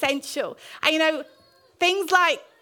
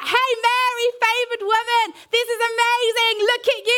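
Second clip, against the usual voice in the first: play-acted fervent, passionate shout, high-pitched; 8 semitones higher, 4 dB louder than usual. Retelling Elizabeth greeting Mary: imitating Elizabeth shouting. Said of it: "she was shouting".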